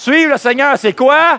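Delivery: very loud, high, belted rousing call.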